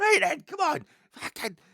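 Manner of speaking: very loud, very high combative fighting yell. Retelling own half-asleep reaction to an imagined intruder: imitating combative lashing out. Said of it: "started lashing out as if somebody was".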